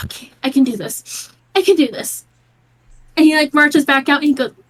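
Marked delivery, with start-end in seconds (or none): 0.0-2.2 put-on teary, steadying voice, slow. Voicing the father crying in the kitchen while cooking: acting crying while pulling together. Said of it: "kinda crying over cooking".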